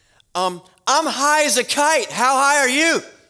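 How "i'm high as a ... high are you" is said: playful, loud, high-pitched yelling. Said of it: "he yells back at me".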